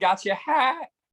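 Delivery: small, high-pitched squealing voice. Mocking a man cowering in the corner after taking a boxer's hat, imitating a high-pitched squeal. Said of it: "with a high pitched voice squealing".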